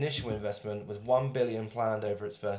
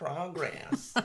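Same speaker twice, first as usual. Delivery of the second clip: fake American twang, higher and quieter; 7 semitones higher, 4 dB quieter than usual. Repeating the other speaker's pronunciation of a word, in a put-on american twang. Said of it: "That sounds like all the people".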